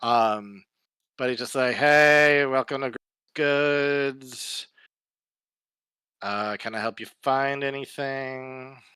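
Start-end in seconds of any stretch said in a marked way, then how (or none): 1.7-8.7 bored-sounding shopkeeper voice. Voicing a shopkeeper at the register greeting customers: bored shopkeeper voice. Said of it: "he just looks bored out of his mind".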